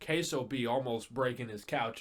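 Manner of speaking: usual speaking voice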